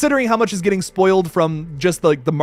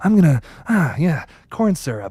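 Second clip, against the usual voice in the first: reserved-crazy killer voice, slower pace; 3 semitones lower than usual. Explaining how the horror-film killer Billy talks, the speaker does a Billy impression. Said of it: "He talks a little bit like this".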